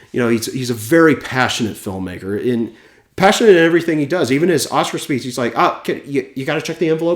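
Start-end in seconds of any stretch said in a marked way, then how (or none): 5.5-7.1 high, pitched-up delivery full of nervous energy. Imitating Martin at his Oscar speech: imitating Martin with nervous energy. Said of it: "Very, very kind of nervous energy".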